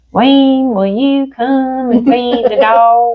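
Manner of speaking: very slow slow-mo speech, dogs stretched long. Retelling how Wayne's grandpa sounded calling on the phone, imitating slow-mo talk. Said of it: "everything about him was kind of slow-mo".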